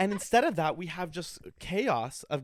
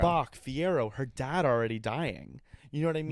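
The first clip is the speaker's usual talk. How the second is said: ordinary talk, nothing marked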